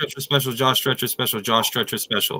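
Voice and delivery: quick-fire, rushed, rapid-fire repetition. Taking a turn at a speed challenge, rattled off fast. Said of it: "I did it faster than you".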